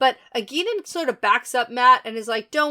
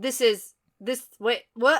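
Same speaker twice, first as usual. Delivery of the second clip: ordinary delivery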